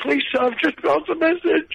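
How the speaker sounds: mock tearful crying voice, very high. Retelling a film scene where a lad starts crying, imitating his crying. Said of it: "starts crying".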